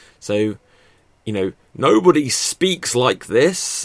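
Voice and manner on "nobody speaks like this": overdone, loud, drawn-out theatrical stage projection. On a podcast about performing, the speaker demonstrates projecting their voice for the stage. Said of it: "It sounds like I'm trying to project my voice for stage".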